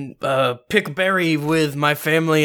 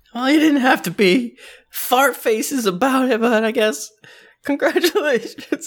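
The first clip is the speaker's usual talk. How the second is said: tearful, teary, pitched-up put-on voice; 9 semitones higher than usual. Voicing a character congratulating the rival cook with tears in his eyes: tearful character voice. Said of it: "he just has tears in his eyes".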